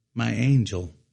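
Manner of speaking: ordinary delivery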